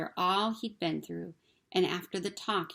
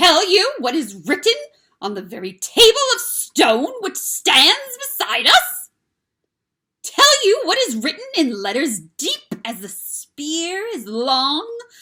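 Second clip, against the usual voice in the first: voice turning very shrill, very high and very loud; 11 semitones higher, 15 dB louder than usual. The witch answers Aslan, her voice growing suddenly shriller. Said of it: "her voice growing suddenly shriller".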